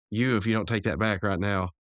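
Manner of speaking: ordinary delivery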